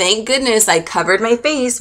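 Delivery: ordinary talk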